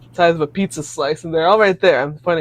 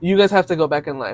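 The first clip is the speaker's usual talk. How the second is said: plain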